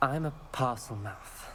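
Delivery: ordinary talk, nothing marked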